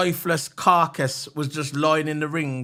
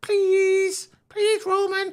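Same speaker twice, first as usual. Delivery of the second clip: put-on geeky pleading voice, pitched higher. Imitating a geeky little guy begging Roman to be friends: pleading Sami Zayn impression. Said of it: "little geeky man".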